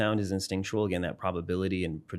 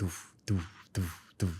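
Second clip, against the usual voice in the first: soft, low "doof doof" sound. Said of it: "So if I made a low".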